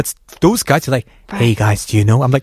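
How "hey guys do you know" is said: put-on failed whisper. Imitating guy friends who cannot whisper: imitating a failed whisper. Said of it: "they don't know how to whisper".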